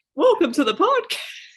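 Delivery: very high-pitched, loud cartoon mouse voice. Showing how their voice changes on camera, in a Mickey Mouse voice. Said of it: "Mickey Mouse is here".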